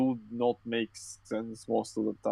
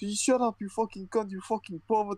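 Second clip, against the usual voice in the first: mock screaming, much higher pitch; 10 semitones higher than usual. Retelling what a woman outside the window yelled, imitating someone screaming. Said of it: "outside of my fucking window screaming".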